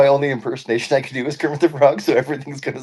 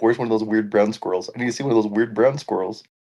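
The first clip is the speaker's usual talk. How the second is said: ordinary delivery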